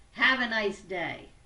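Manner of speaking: very loud, brash, put-on New York accent. Showing how words and tone can clash: put-on New York accent. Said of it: "I did it in my best New York accent".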